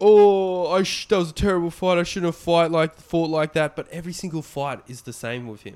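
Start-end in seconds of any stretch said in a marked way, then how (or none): 0.0-3.8 put-on raised, high-pitched, punch-drunk rambling. Mocking a fighter's post-fight talk: imitating punch-drunk Justin Gaethje. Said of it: "he's so punch drunk that he's like".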